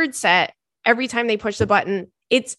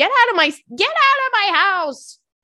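imitated screaming, pitched higher; 11 semitones higher than usual. Retelling how Stanley yelled at someone: imitating Stanley screaming. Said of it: "He is screaming at the top of his gosh darn lungs".

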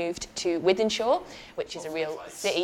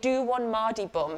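yelling at full voice, pitched higher; 4 semitones higher than usual. Retelling confronting a woman at a party, imitating own past shout. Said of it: "at the top of my voice".

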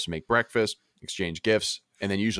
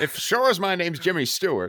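very high-pitched voice; 10 semitones higher, 3 dB louder than usual. Continuing impressions with friends: Jimmy Stewart impression. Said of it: "the impressions where you have to say who you are".

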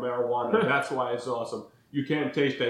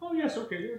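put-on very British agreeable voice, pitched higher; 11 semitones higher, 4 dB quieter than usual. Retelling how the other speaker agreed to the rating system: imitating Quigley, very British and agreeable. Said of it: "being very British and agreeable".

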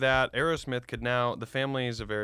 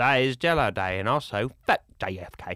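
put-on English accent slipping into Southern accent, louder; 5 dB louder than usual. Quoting a show character during a discussion of it: Bill impression. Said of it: "I wish I did Bill as good as you could do it".

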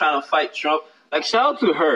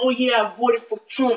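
put-on heavy Spanish accent, laid on thick, pitched up; 6 semitones higher than usual. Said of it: "Thickest accent ever".

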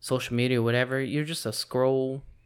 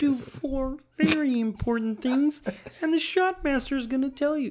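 very high, squeaky cartoon voice, like a puppet; 13 semitones higher than usual. Addressing everybody here, in a Kermit the Frog–Pee-wee Herman mix. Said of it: "That was like a mix between Kermit the Frog and Pee Wee Herman".

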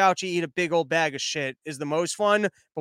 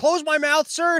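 put-on, very high-pitched, offended, indignant voice; 10 semitones higher, 3 dB louder than usual. Retelling a guy's reply after being told to close his mouth, mock-upset, indignant. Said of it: "tries to get upset and goes".

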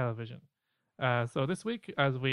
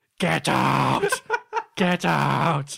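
put-on possessed yelling, louder; 8 dB louder than usual. Imitating a possessed tv psychic breaking a quiet scene: yelling. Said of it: "all of a sudden he'd be like".

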